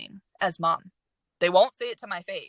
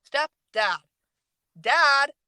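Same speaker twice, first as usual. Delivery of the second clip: re-enacted yell, much higher in pitch; 6 semitones higher, 6 dB louder than usual. Recounting a talk with someone who calls his stepdad dad, retelling a yell. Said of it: "I'm yelling".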